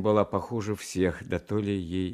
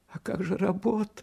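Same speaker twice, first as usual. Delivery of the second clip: quavering, trembling, very high-pitched voice; 13 semitones higher than usual. A mother questions her son Johnny, who says he is leaving, in a trembling voice. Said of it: "дрожащим голосом проговорила мать".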